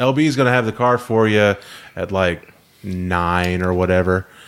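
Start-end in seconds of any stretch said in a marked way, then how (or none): none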